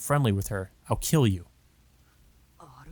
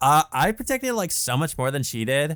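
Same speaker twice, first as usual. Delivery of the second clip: high, pitched-up mock Valley girl voice. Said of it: "Why'd she sound like a Valley girl there".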